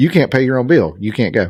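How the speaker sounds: ordinary talk, nothing marked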